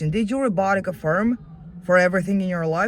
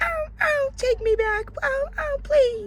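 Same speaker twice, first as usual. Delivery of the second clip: very high, drawn-out, puppy-like whining whimper. Taunting someone as a frightened little puppy in the rain, mock whimpering puppy. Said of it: "like a little puppy in the rain, whimpering, crying".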